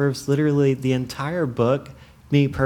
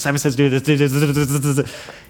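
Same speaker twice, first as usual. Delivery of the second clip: quick, rattled-off, rapid-fire machine-gun delivery; 4 dB louder than usual. Imitating mom calling Simon Says very quickly: imitating mom's very fast talking. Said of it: "this is about how quick she moved".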